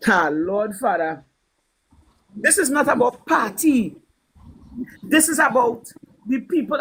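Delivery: slow, earnest, heartfelt delivery. Retelling what a woman said to the speaker: imitating someone speaking with feeling. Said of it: "The woman said it with feelings".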